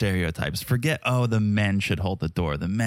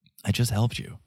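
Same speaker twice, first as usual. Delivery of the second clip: put-on muttering under the breath. Retelling what Caleb said under his breath at the hotel: imitating a muttered remark. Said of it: "under Caleb's breath".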